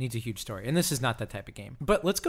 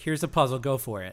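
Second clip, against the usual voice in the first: usual speaking voice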